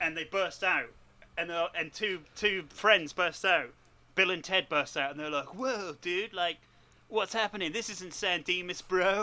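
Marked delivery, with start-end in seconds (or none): 5.6-9.2 put-on laid-back dude voice. Describing two friends bursting into the room, the speaker voices them: Bill and Ted dude voice. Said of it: "They don't talk like that at all".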